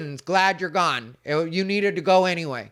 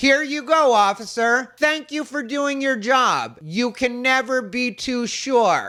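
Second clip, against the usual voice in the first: high-pitched, pointed, showy, performed delivery; 5 semitones higher than usual. Describing what the speaker will say to an officer asking for ID: very loud voice. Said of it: "in a very loud voice".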